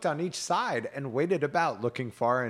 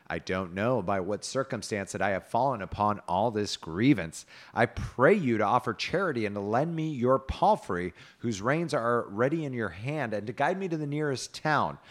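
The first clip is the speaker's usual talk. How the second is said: usual speaking voice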